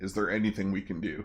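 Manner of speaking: soft, hushed half-whisper. Playing a character who leans to someone's ear to ask: half-whispering in her ear. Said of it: "whisper in her ear".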